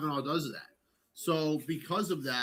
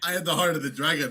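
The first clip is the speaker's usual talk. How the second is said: mocking put-on fighter voice, louder; 6 dB louder than usual. Mocking a fighter who once claimed Chinese identity: imitating Izzy. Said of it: "Remember Izzy was a, was a Chinaman?".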